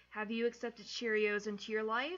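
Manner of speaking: ordinary talk, nothing marked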